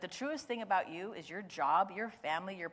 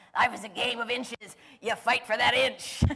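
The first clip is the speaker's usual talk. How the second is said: raspy, booming, very loud rousing roar; 4 semitones higher, 9 dB louder than usual. Quoting a coach's halftime speech from a movie to listeners: raspy Al Pacino voice. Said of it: "in his voice, raspy voice".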